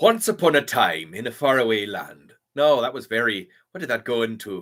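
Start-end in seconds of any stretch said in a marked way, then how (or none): 0.0-2.3 Scottish ogre voice with tone swooping up and down. Asked for a Shrek voice, trying it out: Shrek voice.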